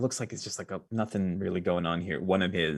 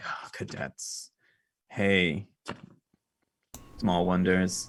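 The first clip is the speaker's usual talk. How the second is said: delivered with a sigh. The game master voicing a man who looks over the players' characters, sighing. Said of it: "he kind of sighs and he's like".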